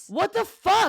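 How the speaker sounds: pissed off. Reacting to an unwanted name on a show flyer: angry. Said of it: "so pissed right now".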